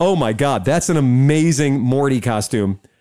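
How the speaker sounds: normal talking voice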